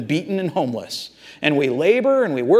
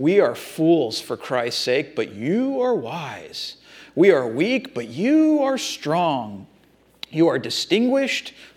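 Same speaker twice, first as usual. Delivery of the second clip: heavy, mocking sarcasm, swooping sing-song. Quoting a letter writer rebuking his proud readers, retelling sarcastic words. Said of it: "he gets real sarcastic with them".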